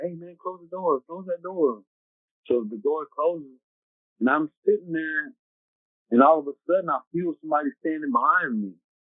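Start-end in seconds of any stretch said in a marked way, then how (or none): 0.0-1.8 loud yell, called out across distance. Retelling yelling at a man to close the door, retelling a yell. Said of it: "But I'm yelling".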